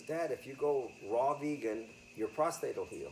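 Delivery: ordinary delivery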